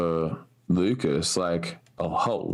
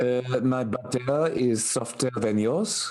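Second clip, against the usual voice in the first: bad fake Parisian accent; 6 semitones higher than usual. A character in a power struggle, stereotypically bad Parisian accent. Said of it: "such a stereotypically bad Parisian accent".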